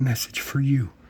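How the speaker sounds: barely voiced, secretive whisper. Speaker recounts a woman pointing at the tip jar, whispering. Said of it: "she whispers and says".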